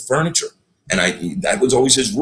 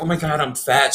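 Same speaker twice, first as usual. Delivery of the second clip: put-on pitched-up skinny girl voice; 5 semitones higher than usual. Contrasting his own habit with how others say it: imitating a skinny girl. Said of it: "like a skinny girl says".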